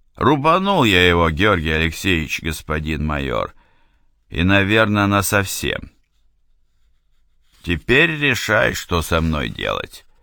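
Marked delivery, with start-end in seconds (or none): none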